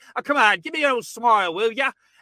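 put-on near-Cockney London accent. Retelling what a smoking, swearing man said while hugging a serial killer, almost Cockney accent. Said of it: "in an almost Cockney".

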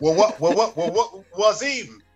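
put-on stuttering voice. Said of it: "You sound like Wazim from Del-, Delbert Wilkins show".

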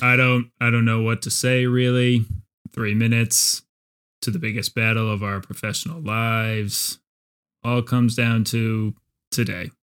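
put-on low, flat deadpan monotone, no pitch lift. Quoting the secondary coach's press-conference speech: imitating a coach's flat monotone. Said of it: "Just delivered in that monotone voice that he gives all of his press conferences in".

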